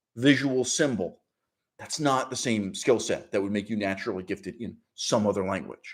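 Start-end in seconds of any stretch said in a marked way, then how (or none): none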